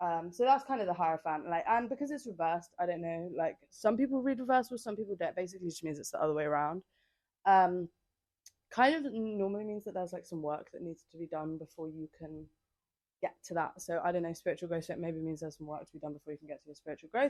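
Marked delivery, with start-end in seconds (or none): 14.8-17.3 rushed, fast-paced talking. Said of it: "I'm speaking so fast".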